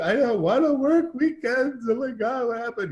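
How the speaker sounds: tearful, teary, very high voice. Retelling what a girl said while learning at work: imitating someone crying.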